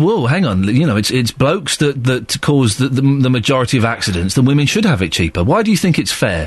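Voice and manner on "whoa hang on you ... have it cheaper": ordinary talk, nothing marked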